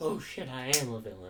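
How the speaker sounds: ordinary talk, nothing marked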